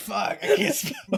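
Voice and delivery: fake sobbing. Acting out a spelling bee loser: mock crying spelling bee loser. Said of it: "spelling bee losers are just crying".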